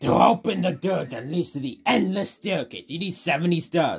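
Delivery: loud, high, bellowing villain voice. While playing the game, a player reads out the Bowser dialogue as a Bowser impression. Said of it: "Was that the good Bowser impression?".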